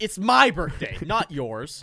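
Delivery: very loud, very slow, drawn-out high yell. Reacting to a story about a birthday dinner, yelling. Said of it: "sorry for yelling".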